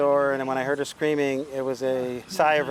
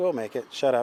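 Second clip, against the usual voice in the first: normal talking voice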